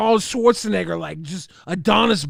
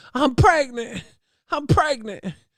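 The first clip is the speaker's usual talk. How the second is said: mock poorly acted distress, higher; 4 semitones higher than usual. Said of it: "She's like".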